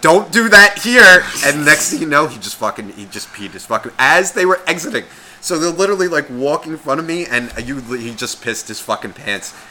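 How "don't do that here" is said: loud, high, slow yell. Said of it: "his mother yells out".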